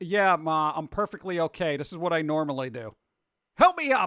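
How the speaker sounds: put-on sarcastic tone. Acting out a reply to Mom hovering after waking: sarcastic reply. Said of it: "You should be sarcastic and be like".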